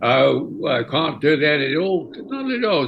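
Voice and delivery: put-on loose, approximate London Cockney accent. Retelling how the assistant director voiced Hal: Cockney accent imitating Derek Cracknell. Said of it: "Sort of the Cockney accent".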